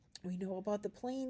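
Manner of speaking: plain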